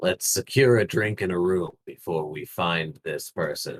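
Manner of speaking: put-on low, gruff, menacing tough-guy voice. Recounting what the speaker said, in a low, gruff, mock-intimidating voice. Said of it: "in my gruffest, uh, most intimidating low voice".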